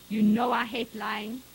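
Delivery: voice hardened by anger. A father questions his daughter about the fire, his voice hard with anger. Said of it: "His voice had grown hard with anger".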